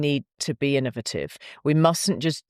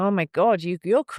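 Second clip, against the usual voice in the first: attempted American accent, higher, then abandoned; 6 semitones higher than usual. Retelling how visiting americans opened the conversation, attempted american accent. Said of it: "I can't do the American accent".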